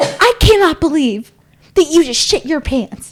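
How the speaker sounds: angry scolding. Retelling how a lady yelled at a man while landing: imitating the lady yelling. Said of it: "she is yelling out loud".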